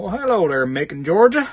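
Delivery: fake Southern Georgia accent, loud and high. Greeting a viewer from Macon, Georgia, in a put-on Georgia accent. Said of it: "I just put the accent on there".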